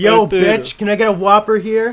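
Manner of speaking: very loud, high-pitched holler. Ordering a burger as an impression: Jesse Pinkman impression. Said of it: "what do you want me to say is Jesse Pinkman".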